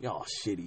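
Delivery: very quiet, muttered mumble. Retelling what a performer said while they walked out: imitating a mumble. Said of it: "I swear he mumbled".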